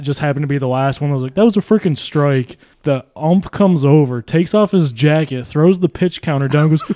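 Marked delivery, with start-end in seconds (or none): none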